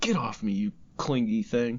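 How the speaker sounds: usual speaking voice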